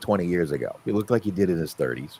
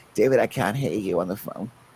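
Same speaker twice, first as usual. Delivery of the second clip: put-on old grandmother voice with Boston accent. Recalling phone calls with his grandmother from Boston: imitating grandmother Charlotte. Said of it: "She sounded like that very much".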